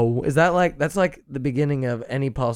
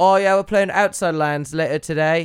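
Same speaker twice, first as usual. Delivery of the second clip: put-on British accent; 4 semitones higher than usual. Joking about the guests' future touring, the host imitates them: put-on British accent. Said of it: "You guys will all have British accents".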